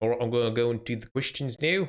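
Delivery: put-on accent drifting into an Australian accent. Speaker attempts a fake accent before taking questions; fake accent slipping australian. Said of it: "That's Australian again".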